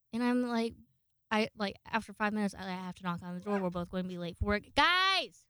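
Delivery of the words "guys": sudden, high, loud yell. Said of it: "I just yelled in the microphone".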